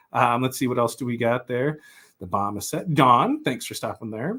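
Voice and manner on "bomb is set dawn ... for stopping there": ordinary talk, nothing marked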